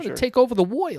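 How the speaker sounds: put-on high, nineteen-thirties old-time gangster voice. Joking about being wired on cuban coffee: 1930s mobster voice. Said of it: "makes me talk like a nineteen thirties mobster".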